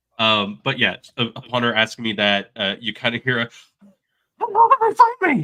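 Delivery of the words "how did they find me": squeezed-out voice, high and loud. Acting out a fleeing character's panicked line: Kermit the Frog voice. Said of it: "you're doing the Kermit the Frog".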